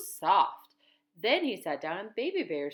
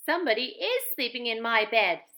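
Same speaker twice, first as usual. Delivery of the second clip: wee, small, little storybook-style voice; 4 semitones higher than usual. Narrator reading the three bears finding their beds, in wee little Baby Bear voice. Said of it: "said Baby Bear in his wee little voice".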